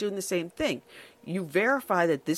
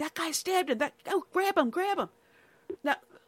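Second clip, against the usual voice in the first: put-on scream, much higher pitch; 10 semitones higher than usual. Describing a video, acting out a bystander's shout, retelling a scream. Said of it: "he's screaming".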